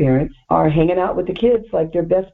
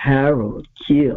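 mimicked announcing delivery, pitched lower; 3 semitones lower than usual. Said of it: "I can't do it like he does".

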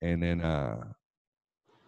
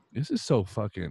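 ordinary talk

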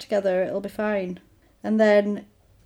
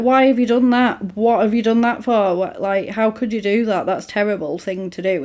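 put-on angry, fuming voice; 3 dB louder than usual. Retelling a plot where the mum finds her roses picked: imitating a fuming mum. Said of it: "the mum is fuming".

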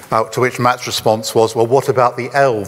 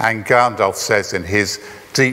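ordinary talk, nothing marked

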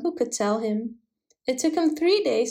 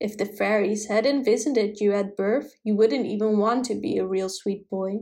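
ordinary delivery

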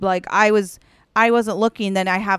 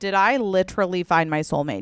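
usual speaking voice

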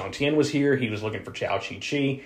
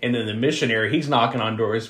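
ordinary talk

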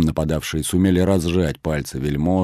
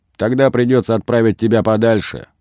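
derisive mocking delivery, pitched up; 5 semitones higher, 4 dB louder than usual. Narrator reads a man cutting off a nobleman who drew his sabre: mockingly interrupting. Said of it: "насмешливо прервал его Басманов".

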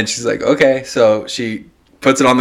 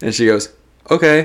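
plain

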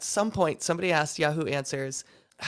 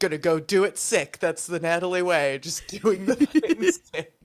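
put-on teasing, mocking, ribbing tone. Retelling how Justin made fun of her for recording sick: Justin mocking. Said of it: "Justin was making fun of me".

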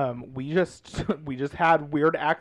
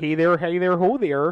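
put-on Midwestern accent, higher; 3 semitones higher, 4 dB louder than usual. Showing how she and a friend sound to others, imitating a Midwestern accent. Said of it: "mine and Josh's like Midwestern".

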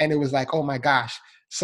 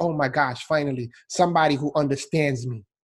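ordinary talk, nothing marked

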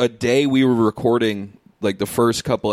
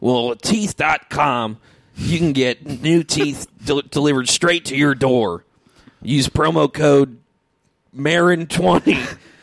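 put-on ad-read voice, pitched higher; 5 semitones higher than usual. Reading a joke promo for a teeth site: put-on Mark Marin voice. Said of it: "I don't know why I'm giving him this voice".

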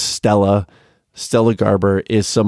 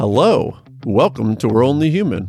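showy, announcer-style game-show host voice; 3 semitones higher than usual. Trying out the show intro again, in a game-show-host delivery. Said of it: "that sounds very game showy".

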